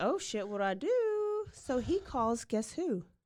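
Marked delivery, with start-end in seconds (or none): 0.0-1.4 very high, frantic, panicked outburst. Telling a story about Grandpa, acting out his reaction: imitating panicked speech. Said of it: "he's like panicking and he's like".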